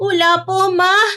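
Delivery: weeping, tearful voice while speaking. A daughter answers her mother's question, crying. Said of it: "Eh umiiyak ka nga".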